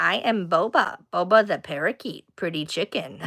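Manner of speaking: soft, little robot voice. Speaker imitates a talking parakeet they follow, Boba the parakeet's robot voice. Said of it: "he sounds like a little robot".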